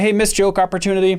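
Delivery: ordinary delivery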